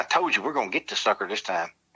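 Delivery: put-on whisper. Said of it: "I'm whispering to my cousin".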